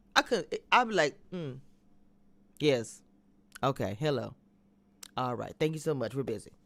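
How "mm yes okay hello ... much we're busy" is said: mock, ice-cold professional politeness with no warmth. Acting out greeting a disliked woman at a restaurant: mock icy coldness. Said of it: "It'd be cold as ice".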